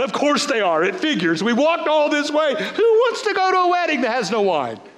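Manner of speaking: acted fed-up, sighing, exasperated voice. Retelling the wedding story, the speaker voices Thomas, mock-exasperated sighing. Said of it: "You can just hear the sigh".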